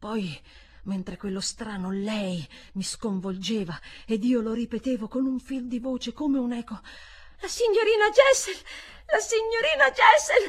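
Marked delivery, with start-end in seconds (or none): 7.4-10.5 sudden, very high, shrill, loud furious shout. Turning on the narrator who had echoed the words, a furious shout. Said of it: "mi gridò con una furia improvvisa".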